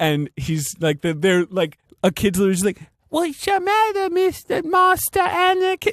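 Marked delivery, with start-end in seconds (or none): 3.1-5.9 put-on cute little kid voice, higher. Retelling a movie scene where a kid asks a question: imitating a cute little kid. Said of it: "the cutest little dweeb".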